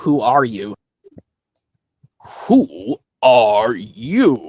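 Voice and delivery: pitch dropped low and swung. Doing a Caterpillar impression from Alice in Wonderland, asking Alice who she is. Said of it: "I think I can know how to do his impression very well".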